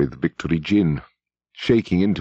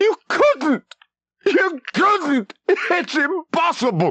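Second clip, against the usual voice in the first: very high-pitched, cracking, cracked cry. Narrating a man crying out to O'Brien over the cage, high, cracked voice. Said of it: "He cried out in a high, cracked voice".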